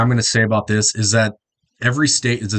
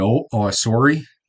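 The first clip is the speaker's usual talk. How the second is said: Midwest accent, somewhat Canadian-sounding. Showing how people from the Midwest talk: Midwest accent. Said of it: "talk with a Midwest accent".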